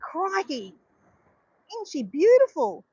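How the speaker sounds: really bad, overdone, slow swooping Australian accent. Quoting a famous film line: really bad australian accent. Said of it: "I'm doing a really bad Australian accent".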